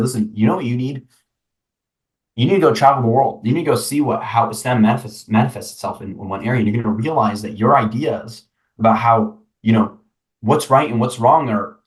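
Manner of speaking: usual speaking voice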